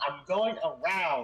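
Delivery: put-on urgent in-character call-out, kept restrained. A player recalls what another player's character shouted out, retelling an in-character shout. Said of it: "in character he shouts out".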